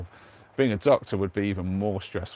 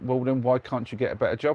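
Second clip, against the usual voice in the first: ordinary talk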